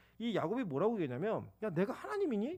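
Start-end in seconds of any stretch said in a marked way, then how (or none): 1.6-2.6 mock irritated, angry-sounding tone. Preacher retelling Jacob's reply to Rachel, retelling an angry retort. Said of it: "이게 화를 내는 거예요".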